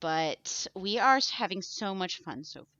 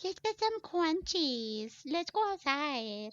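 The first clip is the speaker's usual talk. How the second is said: put-on high-pitched baby-talk voice; 8 semitones higher than usual. Showing how they always talk to their dog: imitating baby talk to a dog. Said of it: "speaks in baby talk to their dog".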